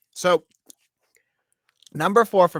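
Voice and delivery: loud, high talk while chewing through mouthful. Speaker starts a quarterback pick while still eating, talking with mouth full. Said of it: "I had a mouthful of food".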